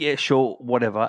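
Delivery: ordinary delivery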